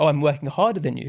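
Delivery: plain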